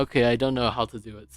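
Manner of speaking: ordinary talk, nothing marked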